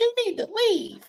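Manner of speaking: put-on very high, tiny little girl voice. Imagining what everyone would have said when he got out the door, in a little girl voice. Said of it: "You'd have heard the little girl voice".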